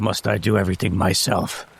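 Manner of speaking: low, muttered under the breath to himself. Voicing a character who sighs and gets up to hunt: mumbling to himself. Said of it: "he mumbles to himself".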